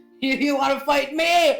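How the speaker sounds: put-on slow, loud, tipsy, combative drunk goblin voice. Voicing a drunk goblin who challenges a player: drunk goblin voice. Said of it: "and he goes".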